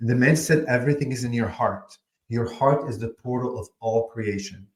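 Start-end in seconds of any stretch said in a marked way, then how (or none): none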